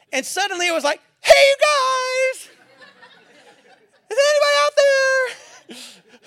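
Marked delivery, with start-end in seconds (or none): 1.2-5.7 very high, slow, panicked call with guys stretched. Retelling a panicked call for help while exhausted in a dark lake: imitating a panicked high voice. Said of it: "all of the bass ... went out of my voice".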